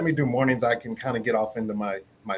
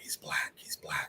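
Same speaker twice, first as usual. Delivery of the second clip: put-on hushed whisper under the breath, childlike. Retelling kids whispering at a school visit: imitating kids whispering. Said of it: "I hear the kids whispering".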